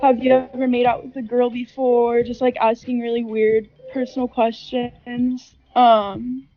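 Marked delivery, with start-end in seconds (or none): none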